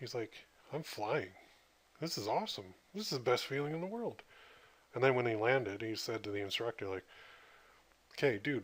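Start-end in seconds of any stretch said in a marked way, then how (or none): 0.7-4.2 mock overjoyed, blissful, pitched-up rush of delight. Retelling how a man felt falling during his jump: imitating blissful joy. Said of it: "he said it just became pure bliss".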